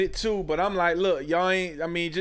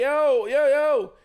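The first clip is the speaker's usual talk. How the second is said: high, loud calling yell; 10 semitones higher, 5 dB louder than usual. Retelling yelling a man's name to get his attention, retelling a yell. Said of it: "I'm yelling his name like".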